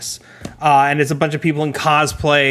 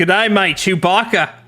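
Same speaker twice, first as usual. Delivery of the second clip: put-on Australian accent; 4 semitones higher than usual. Asked to say chewbacca with an australian accent, the speaker tries an australian accent. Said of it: "Can you say Chewbacca with an Australian accent".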